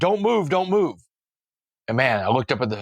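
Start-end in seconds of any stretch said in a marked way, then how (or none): 0.0-1.0 high, screaming cop voice at top of lungs. Retelling a police raid, imitating a cop: imitating a cop screaming. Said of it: "he's screaming at the top of his lungs".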